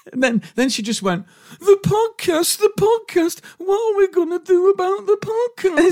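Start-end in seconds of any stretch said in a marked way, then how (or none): 1.6-6.0 very high, mocking parody voice. Retelling how a daughter did an impression of him at home: retelling daughter's impression of him. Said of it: "she did an impression of me".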